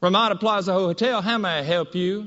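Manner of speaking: put-on very broad Southern woman's accent. Retelling a call for a hotel shuttle, the speaker voices the woman answering: very southern female voice. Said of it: "this very southern female voice".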